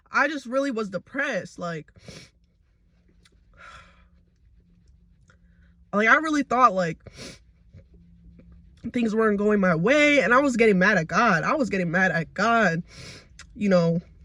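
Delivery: tearful speech, crying while talking. Speaking to viewers about a painful time, crying while talking. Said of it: "I got tears rolling down my face".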